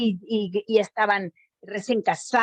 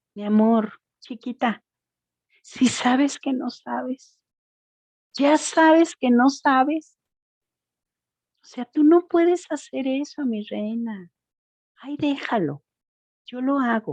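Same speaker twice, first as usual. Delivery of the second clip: play-acted syrupy, delicate, tender condescending tone; 3 semitones higher than usual. Speaker imitating a loving abuser belittling their partner, mock-tender, delicate tone. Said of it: "tan tierno y delicado para decirte".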